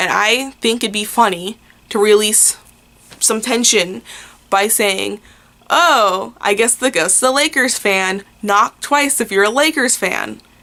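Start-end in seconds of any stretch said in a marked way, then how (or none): none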